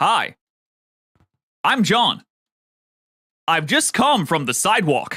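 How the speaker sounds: put-on American accent. Showing someone's best try at an American accent: non-Western American accent. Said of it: "best non-Western American accent".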